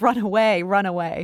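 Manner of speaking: normal talking voice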